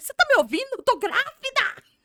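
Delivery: shrill, very high, very loud, revolted, indignant outburst. Retelling repeating her pregnancy news to her mother: imitating her own past outrage. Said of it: "tão revoltada".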